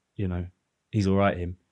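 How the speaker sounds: ordinary talk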